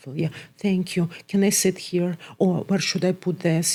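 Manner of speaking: put-on muffled low voice. Imitating a client with no eye contact, looking down: imitating a muffled low voice.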